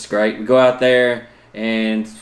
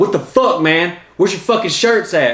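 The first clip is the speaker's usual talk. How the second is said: put-on acted high drunken hollering; 7 semitones higher than usual. Retelling how a drunk man in line reacted to no shirts: imitating a drunk man yelling. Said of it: "He's just, like, yelling".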